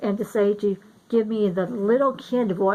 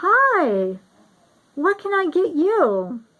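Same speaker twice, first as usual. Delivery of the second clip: put-on very slow, high, sing-song voice for small children; 8 semitones higher, 4 dB louder than usual. Retelling how a guy at the counter greeted her: high voice for little kids. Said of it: "voice kind of like goes up an octave".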